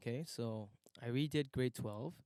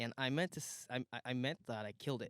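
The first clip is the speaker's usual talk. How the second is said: ordinary delivery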